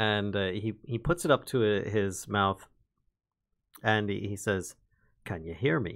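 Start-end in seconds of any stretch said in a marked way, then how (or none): 5.2-6.0 barely-there half-whisper, kept very low. Voicing a character testing a magic message wire: very low half-whisper. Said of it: "in a very low whisper".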